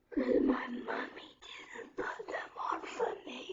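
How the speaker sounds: very quiet, faint, breathy whisper. Retelling what a boy told a teacher, imitating someone whispering. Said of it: "he whispered to her ear".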